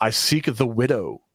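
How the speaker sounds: ordinary talk, nothing marked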